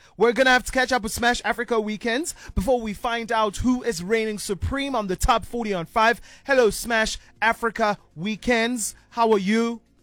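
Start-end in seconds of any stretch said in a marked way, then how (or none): 6.5-9.8 robot-like delivery, slower. Host greeting smash africa weekends on the show, robot voice. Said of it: "Like a robot".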